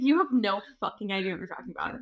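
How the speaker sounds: put-on annoyed voice. Imagining the other speaker's dad joining the episode: imitating an annoyed dad. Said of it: "He would be annoyed also".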